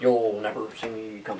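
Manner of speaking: creepy, hushed, quietly menacing villain voice. Talking about a movie seen in the theater, Mandarin's creepy villain voice. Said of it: "Mandarin's voice".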